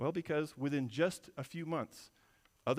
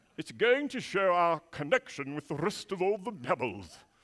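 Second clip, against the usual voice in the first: loud British narrator voice, wildlife presenter style; 3 semitones higher, 6 dB louder than usual. Retelling a claim about the fossil: David Attenborough impression. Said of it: "or however he talks".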